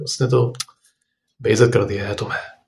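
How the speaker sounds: soft, calm, cool, very detached tone. Showing how to tell someone they were insulted, in a calm, detached tone. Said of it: "बहुत आराम से, बहुत detached वे में".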